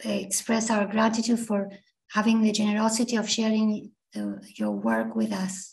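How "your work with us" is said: low, hoarse voice. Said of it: "my voice is kind of hoarse".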